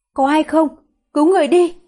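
feeble, weak-voiced, desperate shout. A woman calls out for rescue, too weak to be loud; weak desperate cry for help. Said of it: "tuyệt vọng hét lên, nhưng sức lực quá yếu ớt khiến giọng cô nhỏ đi".

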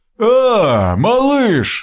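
delighted, very high-pitched joyful exclamation. Narrating a story, a giant spots the narrator peeking from a room; exclaiming joyfully. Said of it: "радостно воскликнул гигант".

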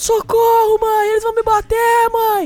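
put-on very high screaming cries. Retelling men threatening to beat a girl, the speaker acts out her: retelling a scream for help. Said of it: "Aí a menina gritando".

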